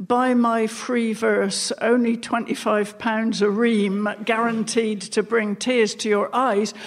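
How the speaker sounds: plain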